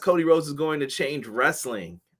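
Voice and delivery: ordinary talk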